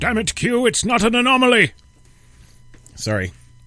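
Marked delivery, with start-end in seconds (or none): 0.0-1.7 put-on voice, pushed high and loud. Doing a quick impression, then announcing the station: Patrick Stewart impression. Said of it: "That was my Patrick Stewart".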